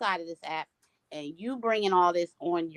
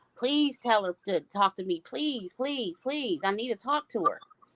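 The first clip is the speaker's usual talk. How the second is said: mock, desperate pleading, repeated over and over; 4 semitones higher than usual. Recounting a woman on the phone begging to talk to someone, retelling her begging. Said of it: "She was at this point begging".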